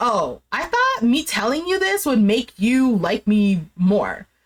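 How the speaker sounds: ordinary talk, nothing marked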